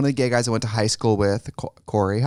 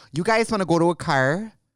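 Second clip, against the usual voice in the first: Wisconsin accent, much higher pitch; 7 semitones higher than usual. Showing the listeners how strong their own accent is, in a full Wisconsin accent. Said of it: "it's full Wisconsin".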